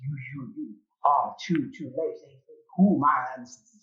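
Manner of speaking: unearthly, grating, scraping metallic voice. Narrating a scene, the speaker gives an otherworldly sound its words: metal-scraping otherworldly voice. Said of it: "It sounds like metal scraping on metal".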